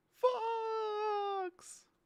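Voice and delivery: high, strained, anguished cry.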